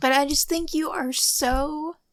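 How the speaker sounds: voice near tears. Telling the other speaker they admire them, on the verge of tears. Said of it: "I'm gonna cry".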